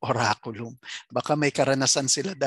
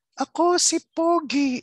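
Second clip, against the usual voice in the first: very high, small, tiny voice; 4 dB louder than usual. Retelling a prayer where a mother spoke as Santo Niño: imitating a woman voicing Santo Niño. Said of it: "nagboses Santo Niño siya".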